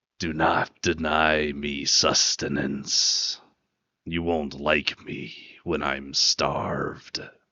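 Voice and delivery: slow, echoing, hollow-sounding voice. Voicing a sword whose voice echoes in a player's head: sword voice echoing in head. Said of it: "you hear that familiar voice echo in your head".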